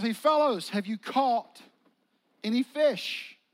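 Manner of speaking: loud projected calling out.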